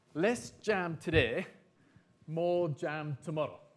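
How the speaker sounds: put-on strong Welsh accent. Recalling an economics teacher's saying about savings, in a put-on Welsh accent. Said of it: "in his strong Welsh accent".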